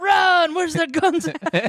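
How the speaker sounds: very high, frantic, alarmed screaming. Relive Ms. Pat's story of the film Schindler's List, imitating Ms. Pat screaming. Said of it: "Miss Pat just screaming".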